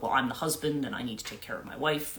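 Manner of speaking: normal talking voice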